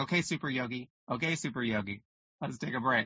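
mock wry, tongue-in-cheek, ribbing, teasing tone. Retelling how a partner tells them to take a break: imitating Michael's tongue-in-cheek tone. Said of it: "he says it like that in a very tongue-in-cheek kind of way".

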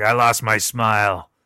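very slow, drawn-out, deep gravelly rumble. Retelling what he said in a remembered moment: imitating a deep gravelly voice. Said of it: "with his deep, gravelly voice".

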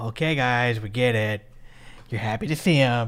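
soothing, humoring, placating settle-down tone. Retelling the way she spoke to the guys, mock-placating tone. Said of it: "Just placating".

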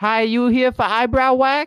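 very high, carrying yell. Retelling how the woman from the back greeted him as he walked in: imitating a yell across the store. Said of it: "she yells from across the store".

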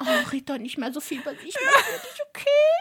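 put-on very high, coaxing, flirty pleading tone. Retelling a reality show scene, mocking a contestant's pleading: imitating Thyla's flirty pleading. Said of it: "Und Thyla immer so".

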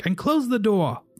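shouting. Voicing a character calling back to a departing player: yell. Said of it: "you hear him yell back".

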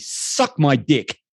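forceful, emphatic, hard-hit stressed delivery. Retelling what a film character says to the bad guys: imitating an emphatic line. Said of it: "just says emphatically".

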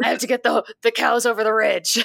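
put-on gravelly old man voice. Showing the family shtick of talking like Kevin Costner, a Kevin Costner voice. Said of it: "in just this like grovelly old man voice".

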